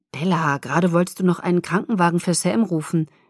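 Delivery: ordinary delivery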